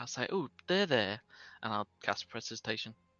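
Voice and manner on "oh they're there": soothing, gentle, innocent voice. Voicing a character casting a cleaning spell: soothing, innocent voice. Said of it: "soothing, like, innocent voice".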